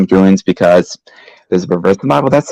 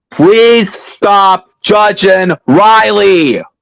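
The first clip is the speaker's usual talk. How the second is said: raised, very high-pitched voice; 11 semitones higher, 3 dB louder than usual. The speaker cuts into the group's banter, raised voice. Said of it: "it's time to raise my voice".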